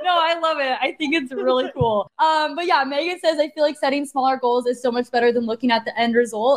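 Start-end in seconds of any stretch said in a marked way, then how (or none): none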